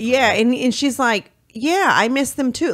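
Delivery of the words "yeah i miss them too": nonchalant, offhand, casual, uncaring throwaway delivery. Retelling a mother's jailhouse reply to her son: imitating a nonchalant reply. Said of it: "real nonchalant".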